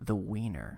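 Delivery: low, seductive, sultry voice. Listing item number three, saying the wiener in a sultry voice. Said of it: "I don't know why I did it with that uh, sultry voice".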